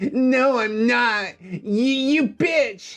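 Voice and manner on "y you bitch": angry outburst, pitched up. Narrating a story, the reader voices a character's outburst, shouting angrily. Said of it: "he shouted angrily".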